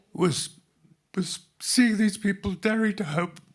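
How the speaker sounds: overcome, emotional voice, very high-pitched and loud. Describing what was discovered, pausing to apologize: getting emotional. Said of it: "I get emotional by this".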